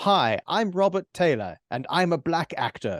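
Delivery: put-on very fine, proper British accent. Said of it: "this very fine, proper British accent".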